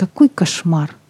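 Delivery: plain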